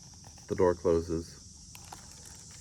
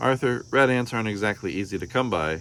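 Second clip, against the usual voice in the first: ordinary delivery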